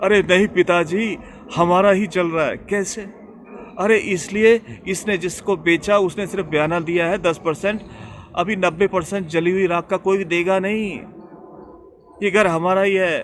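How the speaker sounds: excited, alarmed voice.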